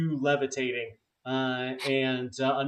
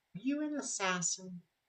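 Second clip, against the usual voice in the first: put-on gentle, soft-spoken, soft high childlike voice; 6 semitones higher, 9 dB quieter than usual. Narrating a scene, voicing someone who looks up at the hooded listener: soft voice. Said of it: "you hear this soft uh, voice saying".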